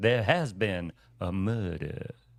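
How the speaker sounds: slow, polished, genteel Southern American accent. Showing off a better Southern accent with a sample line: sophisticated Southern accent. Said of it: "This is a more sophisticated Southern accent".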